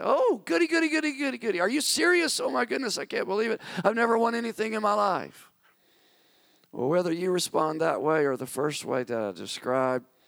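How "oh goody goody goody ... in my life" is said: high-pitched, bursting, bouncing-up-and-down delighted excitement. Speaker acting out how some people react to winning news: acting out jumping-up-and-down excitement. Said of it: "might start jumping up and down in excitement".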